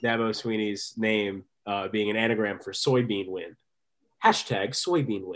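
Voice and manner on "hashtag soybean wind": put-on British comedian voice. Quoting a comedy segment about an anagram: bad John Oliver impression. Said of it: "That was a pretty bad John Oliver impression".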